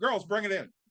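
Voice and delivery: put-on high, mild calling-out voice. Retelling calling the players in before a game: imitating own scream. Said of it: "And I screamed out".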